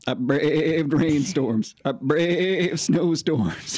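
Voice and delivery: silly, high, loud talking-goat voice. Asked by the others to do his goat voice, the speaker performs his one line: goat voice. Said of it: "I do a goat voice".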